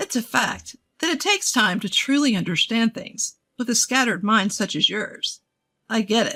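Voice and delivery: ordinary delivery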